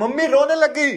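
loud, high-pitched calling out.

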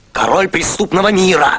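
hollered, shouted, boastful street-tough delivery. A man calling himself a robber answers someone questioning him at night, shouting. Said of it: "Ты не кричи, не глухой".

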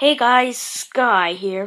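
booming voice, big and slow. With no suggestions coming in, the speaker tries a greeting: bad Sky impression. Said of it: "I suck at that impression".

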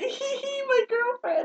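put-on giggling. Teasing the person who introduced them as a friend, imitating them giggling. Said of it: "you're like".

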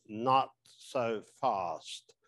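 put-on, fake English accent. Quoting a man answering a concern about scleral lenses, in a put-on English accent. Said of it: "in an English accent, of course".

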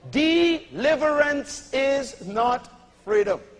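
very slowly drawn out, deliberate, word by word. Repeating a point to the audience, saying it very slow. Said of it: "I'm going to say it slow".

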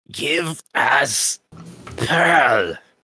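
gurgling, choked, high forced-out words. Narrating the game, the speaker voices one of the players' old friends, choked out. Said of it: "manages to choke out".

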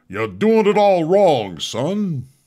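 loud, very high, slow, swooping voice. Sharing a picture of Chairman Powell, joking in Foghorn Leghorn voice. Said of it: "That was a good imitation".

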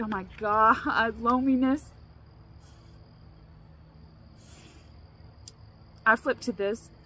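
choked-up voice. Flipping to a random page of their own book, choking up. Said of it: "I'm getting choked up".

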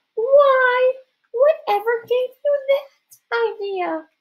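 very high put-on girlish voice, "why" drawn out. A narrator in disguise, nearly caught by Mrs. Periwinkle, adds a line in a more girl-like voice. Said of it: "added in a more girl-like voice".

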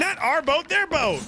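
loud, shouting yell. Directing a teammate in a game who fires toward their own boat: yelling. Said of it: "I am yelling a lot".

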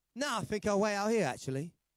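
acted sarcastic tone. Retelling what he answered when asked if he was coming in, mock sarcastic. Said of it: "obviously, it's sarcasm".

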